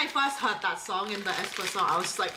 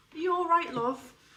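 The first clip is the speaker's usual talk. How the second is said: pitched-up, caring boarding-school matron voice; 7 semitones higher than usual. Recalling the matron who cared for sick pupils at boarding school, imitating the boarding-school matron. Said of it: "I had a matron at boarding school ... like this".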